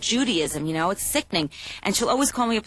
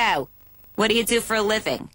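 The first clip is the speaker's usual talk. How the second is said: imitated grilling, interrogating tone. Imitating the mother questioning a boyfriend: imitating mother grilling. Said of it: "My mother starts grilling him".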